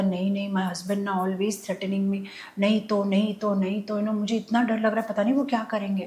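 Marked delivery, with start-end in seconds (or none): none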